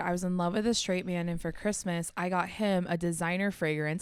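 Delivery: plain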